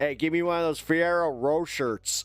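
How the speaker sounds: put-on Pittsburgh accent. Imitating someone from downtown Pittsburgh ordering chocolates: imitating someone from Pittsburgh. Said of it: "somebody from, like, you know, uh, just downtown, uh, like, Pittsburgh".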